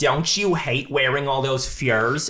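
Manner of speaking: playful put-on Midwestern accent. Describing a scene, imitating a woman's line, fun Midwestern accent. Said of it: "she's doing a really fun Midwestern accent".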